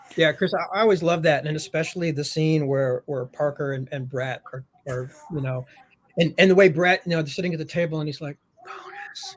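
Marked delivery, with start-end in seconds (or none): 8.7-9.4 hushed half-whisper, very high and soft. Retelling how a character half-whispers to his buddy: imitating a half-whisper. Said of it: "he's whispering".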